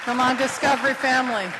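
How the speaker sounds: loud, high call-out, projected to the room.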